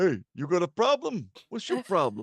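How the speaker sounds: cartoon bear character voice. Recasting a character as being from Philly: Yogi Bear voice. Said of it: "You sound like Yogi fucking Bear".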